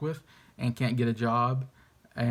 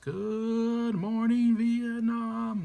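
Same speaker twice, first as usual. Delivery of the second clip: good stretched out, pitched way up high; 11 semitones higher than usual. Naming a movie title and saying it the way the actor says it: Robin Williams voice. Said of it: "say it in the Robin Williams voice".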